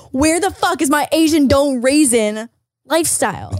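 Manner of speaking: loud, slow, indignant outburst.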